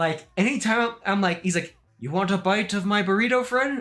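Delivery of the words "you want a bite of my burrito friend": deadpan delivery. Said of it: "he'd say it in the most stone cold way".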